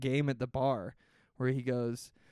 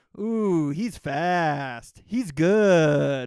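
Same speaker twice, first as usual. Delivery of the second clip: booming, drawn-out, patronizing delivery; 4 semitones higher, 10 dB louder than usual. Imitating an actor praising someone in a film: imitating Kevin Costner, patronizing. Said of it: "He's being very patronizing".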